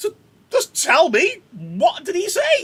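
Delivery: frantic, high, loud, crying, pleading outburst.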